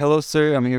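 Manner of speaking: put-on Indian English accent. Retelling a phone call from a pizza delivery driver: imitating an Indian accent. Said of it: "with his accent".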